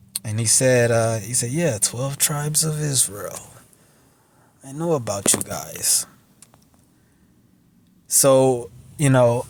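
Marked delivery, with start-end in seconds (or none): 1.5-6.0 put-on European accent, much quieter. Retelling what a man said, imitating a European-type accent. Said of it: "like a European type accent".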